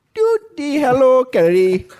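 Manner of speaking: fake Norwegian accent. Invited to finally do a Norwegian accent, the speaker gives it a go: mock Norwegian accent. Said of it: "You have wanted to do your Norwegian accent".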